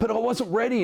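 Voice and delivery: super angry, furious, very high-pitched complaining tone. Retelling a racer's excuse after losing a race: imitating someone super angry. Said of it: "super angry about it".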